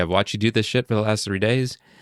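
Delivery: voice lifted in outburst. Retelling how the father confronted him: imitating father raising voice. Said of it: "he raises his voice a certain way".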